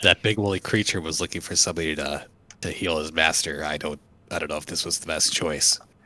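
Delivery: hushed half-whisper aside. Leaning over to a companion in character, half-whispering in character. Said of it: "Just kinda whisper it to her".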